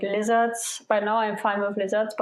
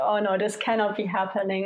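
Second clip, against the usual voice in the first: usual speaking voice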